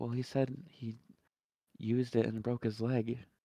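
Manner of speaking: soft, hushed half-whisper. Answering a woman who just half-whispered a secret, half-whispering back. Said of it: "I'll kind of whisper back".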